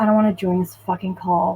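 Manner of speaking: muttering under the breath. Retelling dialing into a work call: imitating muttering under breath. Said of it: "I say under my breath".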